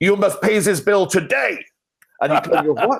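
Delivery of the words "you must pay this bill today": put-on higher-pitched Ukrainian accent. Quoting the recorded message the company made for its bills, Igor's Ukrainian accent. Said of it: "We got Igor in his Ukraine accent".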